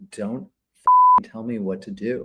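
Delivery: acted-out angry outburst, temper boiling over, swooping pitch. Retelling pointing a finger at the woman after losing it: retelling losing his temper. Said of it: "lost it finally".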